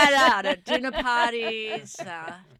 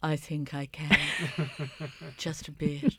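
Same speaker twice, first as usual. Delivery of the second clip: deliberately lowered, deeper tone; 7 semitones lower, 6 dB quieter than usual. Asked by the co-host to lower it even further, answering in a lowered voice. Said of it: "can you lower it even further".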